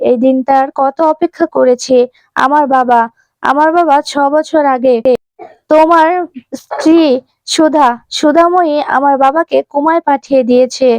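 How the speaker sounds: plain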